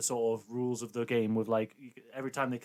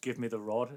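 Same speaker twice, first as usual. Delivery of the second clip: normal talking voice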